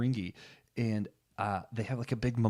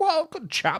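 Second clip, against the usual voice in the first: bad put-on Southern American accent, higher and louder; 7 dB louder than usual. Retelling characters who use a terrible old southern american accent: imitating a terrible old southern american accent. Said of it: "terrible, like, old Southern American accents".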